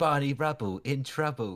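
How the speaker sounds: butchered fake British accent. Retelling a clip, the speaker quotes a man's line in a bad british accent. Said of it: "that was a butchering of an accent".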